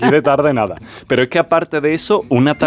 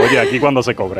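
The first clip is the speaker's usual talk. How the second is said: ordinary talk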